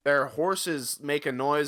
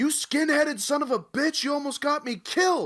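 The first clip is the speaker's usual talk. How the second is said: acted, very high, shrill screaming; 13 semitones higher, 3 dB louder than usual. Retelling a movie scene where Jeremiah Johnson hits Del, imitating Jeremiah Johnson screaming. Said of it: "he screams at him".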